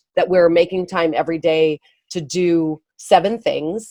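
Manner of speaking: ordinary talk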